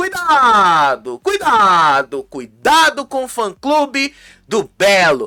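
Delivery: threatening, menacing tone.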